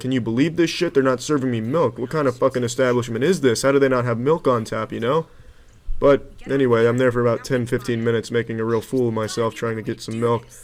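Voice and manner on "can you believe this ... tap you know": ordinary talk, nothing marked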